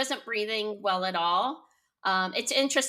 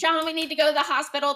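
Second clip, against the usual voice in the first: put-on screaming, higher and louder; 6 semitones higher, 5 dB louder than usual. Retelling the moment the water broke, calling to john: retelling own scream. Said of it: "and I screamed".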